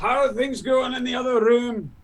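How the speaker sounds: high, carrying calling-out character voice. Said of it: "Grumman calls out".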